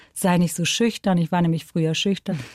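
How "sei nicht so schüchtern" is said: ordinary talk, nothing marked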